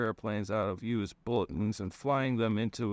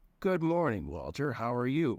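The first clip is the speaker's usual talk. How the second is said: mocking, derisive, taunting tone. Reading the narrator answering Missus Duffy's concerned question, in a mocking tone. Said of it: "I said in a mocking tone".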